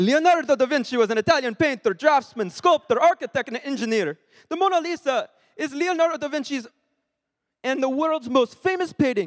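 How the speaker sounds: put-on, attempted Italian accent. Reading a passage about [name], attempted Italian accent. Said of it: "Should I try reading this in a Italian accent? I can't do it, but I can try".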